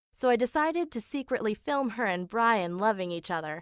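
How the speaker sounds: ordinary talk, nothing marked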